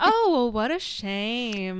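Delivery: very slow, coy, suggestive flirty drawl. Retelling a scene from the show, quoting how Samantha starts it: imitating Samantha's suggestive tone. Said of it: "Like you hear it in".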